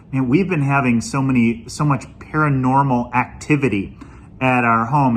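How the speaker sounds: normal talking voice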